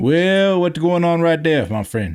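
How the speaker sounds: put-on high-pitched Cajun accent. Answering a request to do a Cajun accent right now: Cajun accent. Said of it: "do a Cajun accent right now".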